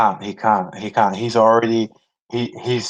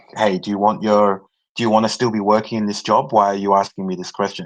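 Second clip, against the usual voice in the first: plain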